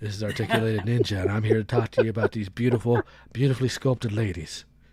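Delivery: nice soft, very low voice. Mimicking another channel's host opening a review: imitating Articulated Ninja's soft voice. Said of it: "his nice, soft voice".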